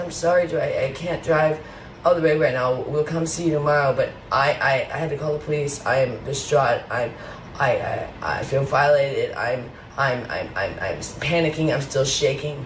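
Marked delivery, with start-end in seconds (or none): none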